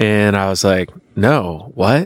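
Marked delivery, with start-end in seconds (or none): none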